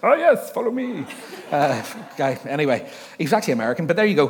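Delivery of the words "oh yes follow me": put-on mixed French and German accent. Retelling a tour guide leading the group: put-on French-German accent. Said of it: "He was a French German".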